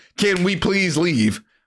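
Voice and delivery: put-on pleading voice. Retelling how Ethan begs the officer to leave: imitating Ethan begging and pleading. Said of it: "after Ethan is begging and pleading".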